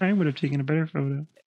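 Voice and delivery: high-pitched frog puppet voice. Acting out a negative Nancy who criticizes a photo, in a Kermit the Frog voice. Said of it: "everybody who's being a negative Nancy talks like Kermit the Frog".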